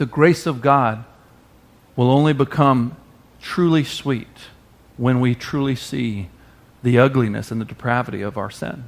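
slow, deliberate, halting, broken-up phrasing. Repeating a point to listeners that was just made, said slowly. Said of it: "I'll say that slow".

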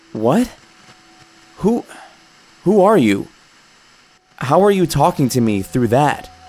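trembling voice. Startled by a voice coming through a radio's static, the narrator asks: shaky voice. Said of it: "I asked in a shaky voice".

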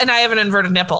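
blurted out quickly.

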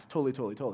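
really fast, rapid-fire repetition of the same word. Showing how they say their favorite catchphrase to each other, really fast. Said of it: "especially when we say it really fast, ... like that".

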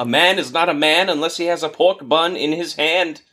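play-acted, shrill hawker's cry, pitched very high. Retelling a game street vendor who always yells at you: imitating a yelling street vendor. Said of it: "he just yells it".

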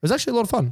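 genuinely surprised. Host recommending an earlier episode with a guest to listeners, sounding surprised. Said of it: "Why you sound surprised".

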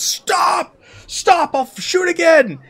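shrill, high, drawn-out yell. Narrating a chase scene, voicing a man who shouts after the fleeing listener: shouting. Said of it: "and he shouts".

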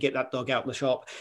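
ordinary talk

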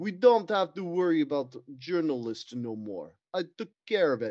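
slow, fake, put-on Russian accent. Telling a comedic bit, the speaker voices a character in a put-on russian accent. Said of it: "Why are you still doing Russian?".

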